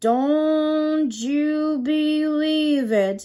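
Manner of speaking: very slow, deep, ghostly voice, don't drawn out. Speaker retells a film ending where Tom speaks, in Tom's ghostly deep voice. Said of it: "in that ghostly deep voice".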